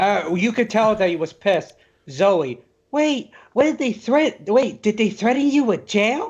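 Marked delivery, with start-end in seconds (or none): 2.9-6.3 attempted woman's voice, pitched up. Reading out a message from Zoe in put-on female voice. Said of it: "that's my best female voice".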